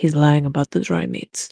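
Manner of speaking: leaned-in hushed whisper. Pedro leans down with a hand on his sword to Rigatoni, whispering as Pedro. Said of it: "lean down and whisper to Rigatoni and goes".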